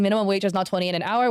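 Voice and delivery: plain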